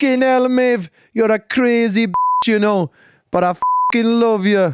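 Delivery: put-on weird Irish accent, shrill, high and loud. Copying a character's lines on request, Conor Harrigan Irish accent. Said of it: "Weird Irish accent".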